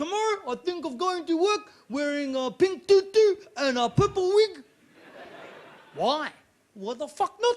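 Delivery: put-on Maori accent. Performing a bit for an audience in a put-on Maori accent. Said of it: "you've got that Maori accent down pretty well".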